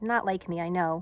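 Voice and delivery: ordinary talk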